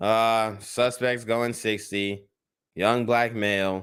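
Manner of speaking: tired, bored, flat, slow, weary drone. Describing a police chase, the speaker imitates a tired cop. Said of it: "he's tired of y'all shit. You can hear it in the tone of his voice".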